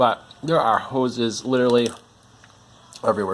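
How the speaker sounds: talking while chewing. Sorting tangled hoses one by one with numbers, talking while chewing. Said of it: "Sorry while I'm chewing".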